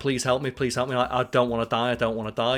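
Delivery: put-on desperate, pleading voice. Retelling a show scene where a wounded man begs Joel: imitating a man begging for his life. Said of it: "he's begging".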